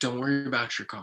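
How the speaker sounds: acted super calm, reassuring tone. Recalling a friend's words during a shared experience, imitating friend's super calm voice. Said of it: "he was just like super like calm".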